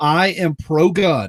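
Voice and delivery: very slow, deliberate, clearly enunciated word by word. Stating a position to a chat audience, very slow and clear. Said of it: "I need to say this very slowly".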